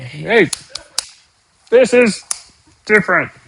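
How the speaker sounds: angry computer voice, high and slow, put-on r sound. Going through model output with R's asterisks, doing a mock-angry R voice. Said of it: "angry R voice".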